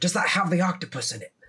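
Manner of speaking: high-pitched, loud stage whisper. Recounting how a man whispered to Kevin, retelling a loud whisper. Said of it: "loudly whisper to Kevin".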